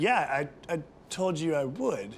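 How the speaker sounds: deadpan, straight-faced delivery. Retelling Ted's straight-faced reply after cutting a guy: imitating Ted's deadpan reply. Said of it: "psychopath, straight face".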